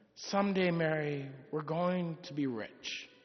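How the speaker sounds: mock soft, slightly sorrowful delivery. Telling a story, the speaker acts out a young man speaking to his bride in a sorrowful voice. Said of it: "in a bit of a sorrowful voice".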